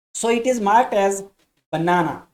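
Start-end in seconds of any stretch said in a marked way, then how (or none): 1.7-2.1 stress on second syllable na. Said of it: "It has stress on the second syllable".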